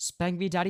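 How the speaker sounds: dead-flat, emotionless, machine-like robotic monotone. Line delivered so it sounds like an AI voice, flat monotone. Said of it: "said in the most monotone voice ever".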